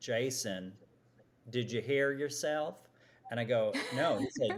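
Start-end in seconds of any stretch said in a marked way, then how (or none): 0.0-2.7 mock Southern US accent. Retelling what his boss said to him after he presented: imitating boss's Southern accent. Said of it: "who has a great Southern accent".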